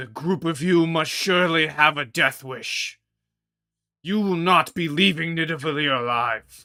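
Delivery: shouting villain voice. Voicing a character who shouts into the room at the group: Fafnir's furious shout. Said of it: "shouts out".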